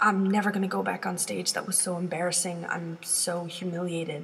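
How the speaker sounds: ordinary talk, nothing marked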